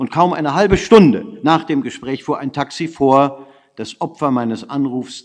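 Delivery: ordinary delivery, nothing marked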